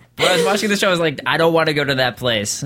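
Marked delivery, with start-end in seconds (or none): none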